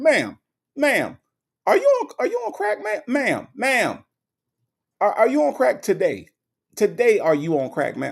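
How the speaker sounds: high, swooping, swinging pitch with attitude. Retelling how a judge questions people in court: Judge Mathis impression with attitude. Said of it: "Judge Mathis come in with an attitude".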